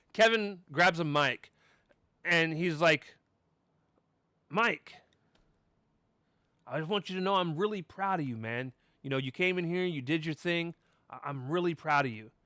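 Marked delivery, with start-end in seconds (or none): 4.5-12.2 put-on patronizing, insincere, falsely proud tone. Retelling a wrestler's praise on the mic: imitating Kevin Knight sounding condescending. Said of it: "it really sounded more condescending".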